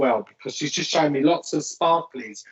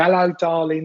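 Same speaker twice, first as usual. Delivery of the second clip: put-on Cockney voice, louder; 3 semitones higher, 5 dB louder than usual. Repeating the greeting of a cheeky lady coming close: Cockney accent. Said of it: "really kind of like Cockney slang with this lady".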